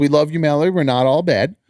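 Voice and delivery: ordinary talk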